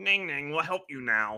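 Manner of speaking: high, loud, croaky frog-creature voice. A game master voices a frog head speaking into a player's mind, croaking frog voice. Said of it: "You hear a croaking voice".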